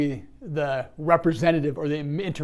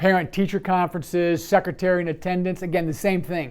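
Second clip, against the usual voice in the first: ordinary delivery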